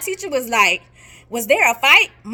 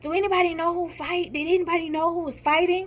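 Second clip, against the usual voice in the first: put-on airy, raspy, mush-mouthed voice; 5 semitones higher, 7 dB quieter than usual. Retelling a teacher asking about a fight: imitating teacher's airy raspy mush-mouth voice. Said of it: "it's kinda airy, raspy".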